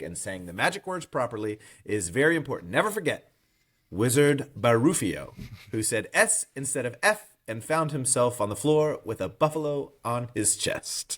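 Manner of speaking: plain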